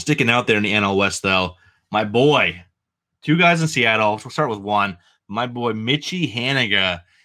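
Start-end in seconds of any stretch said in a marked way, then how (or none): 5.3-7.0 slow New England accent slipping out. Recommending a Seattle baseball player, New England accent slipping out. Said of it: "my New England accent just came out on that".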